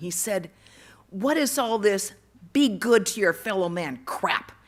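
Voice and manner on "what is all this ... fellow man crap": very loud, enraged, furious shout. Retelling how an enraged young boy yelled at god, retelling a yell. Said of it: "He yelled at him".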